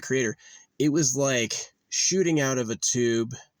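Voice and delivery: plain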